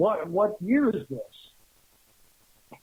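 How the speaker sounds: mock furious, very slow, dragged-out, swooping voice. Retelling what a furious stranger yelled at a man, retelling a furious yell. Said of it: "looked furious and he was yelling at him".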